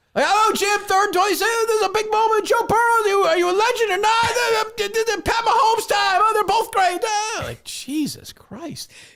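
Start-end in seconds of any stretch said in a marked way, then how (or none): 0.3-7.1 loud, high, rambling, stammering play-by-play announcer patter. Mocking the commentator's rambling game call: Tony Romo impression. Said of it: "just call the game, you lunatic".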